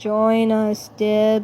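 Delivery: empty, flat, trance-like, mindless monotone drone. Narrator voicing entranced voices calling to Dib, in a mindless monotone. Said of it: "Sounding mindlessly monotone".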